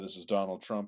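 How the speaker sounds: ordinary talk, nothing marked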